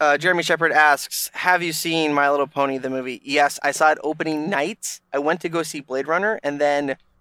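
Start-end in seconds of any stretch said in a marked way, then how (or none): none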